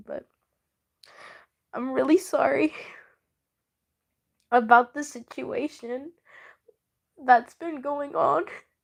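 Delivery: tearful speech, crying while talking. Apologizing to their audience about the situation, crying while talking. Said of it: "I shouldn't be crying".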